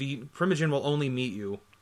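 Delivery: ordinary talk, nothing marked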